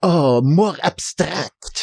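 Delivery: put-on heavy Eastern European accent. Imitating an Eastern European artist from class, in a thick accent, sounding important. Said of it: "he would have a thick accent and sound important".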